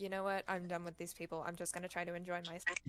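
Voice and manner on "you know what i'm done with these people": usual speaking voice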